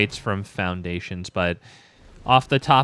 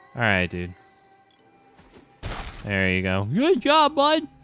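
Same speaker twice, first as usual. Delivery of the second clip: sarcastic, swooping sing-song with encouraging tone. Sarcastically encouraging an opponent after a card play: sarcastic encouragement. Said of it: "Just sarcastically encouraging him".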